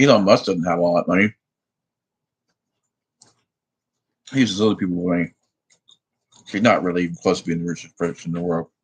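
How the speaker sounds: talking with mouth full. Speaker keeps talking to listeners while eating, talking with mouth full. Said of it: "I'm eating with my mouth full".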